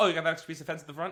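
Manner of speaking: rattled off at top speed, rapid-fire. Retelling someone's question, speeding up on purpose: very fast speech. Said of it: "I'm going to start speaking really fast. This is intentional".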